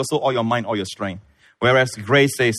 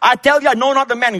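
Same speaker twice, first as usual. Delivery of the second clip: high, loud cursing and swearing. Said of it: "cursing and swearing".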